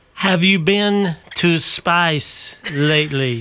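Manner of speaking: put-on French accent. Urging Mitch to say the line into the mic, in a put-on French accent. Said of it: "He went French".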